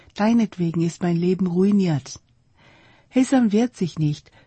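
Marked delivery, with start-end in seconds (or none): none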